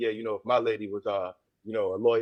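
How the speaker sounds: low, smooth, smooth-talking charmer put-on voice. Retelling how a man spoke to the woman next to him: put-on low smooth voice. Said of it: "the low smooth voice".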